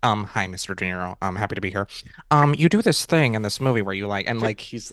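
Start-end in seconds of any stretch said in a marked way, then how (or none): 0.0-1.9 put-on nerdy young-man voice, slower. Podcast host mocking a young man's video asking an actor questions, imitating a nerdy young man. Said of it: "What's that impression".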